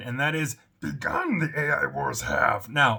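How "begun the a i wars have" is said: slow, creaky puppet voice, badly done. Security host greets everybody, starting with his best Yoda impression. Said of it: "my best Yoda impression".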